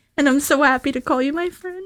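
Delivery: choked-up, tearful, breaking voice, very high pitch. A friend replies to heartfelt praise from a friend, crying, voice breaking. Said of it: "I don't know why I'm crying about this".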